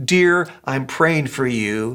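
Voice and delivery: low, slow, sweet voice. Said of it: "looks at me so sweetly and says".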